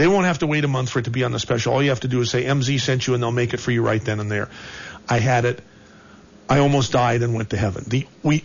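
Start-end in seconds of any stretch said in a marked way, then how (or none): none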